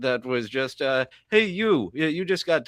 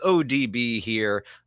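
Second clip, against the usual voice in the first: usual speaking voice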